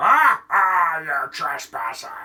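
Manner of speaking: deep, swashbuckling pirate voice. A game master voices a character in Freddy's boiler room: pirate voice. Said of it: "Why did I make him sound like a pirate?".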